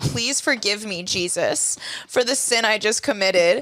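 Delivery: mock hysterical, sobbing crying voice. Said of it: "he gets hysterical about it".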